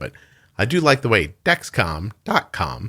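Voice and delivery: slow voice, cracking mid-word. Speaker saying a website address aloud, voice cracking. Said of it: "my voice just cracked there".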